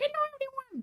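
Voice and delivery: tiny put-on little voice, very high. Speaker shows the voice she uses on waking, greeting everyone, little voice. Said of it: "make a little voice like".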